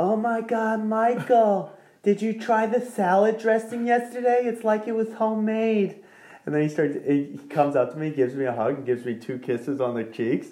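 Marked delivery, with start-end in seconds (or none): 0.0-6.0 very high-pitched, raised hollering yell. Recounting a man calling across the driving range; retelling his yell. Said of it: "he just starts yelling".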